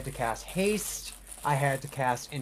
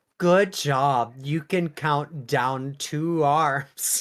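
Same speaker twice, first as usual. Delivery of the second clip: put-on patronizing, pat-on-the-head praising tone. Teasing the other speaker by voicing their imagined reply: mock-condescending. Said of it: "condescendingly be like".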